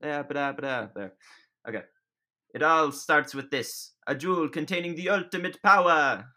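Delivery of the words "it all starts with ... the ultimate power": put-on high-pitched cartoon voice. After warming up, voicing a scene's opening line in Mario voice. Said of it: "Let me get into my Mario voice".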